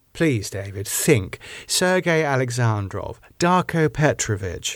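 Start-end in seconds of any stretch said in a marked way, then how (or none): none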